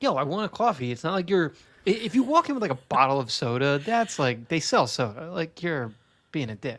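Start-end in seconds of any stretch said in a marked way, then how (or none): 0.0-0.9 put-on New York accent. Speaker acting out a moviegoer asking theater staff for coffee, New York accent. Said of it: "You just totally got like a New York accent when you say coffee".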